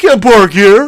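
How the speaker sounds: loud, high, stock disagreeing delivery. Showing how people sound when quoting someone they disagree with: imitating the disagreement person voice. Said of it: "that's the disagreement person voice".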